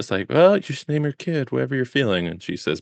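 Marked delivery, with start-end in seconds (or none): 0.3-2.3 very passive-aggressive, high-pitched tone. Retelling what the nurse says to the new mother: imitating a passive-aggressive nurse. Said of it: "the nurse is just being very passive-aggressive".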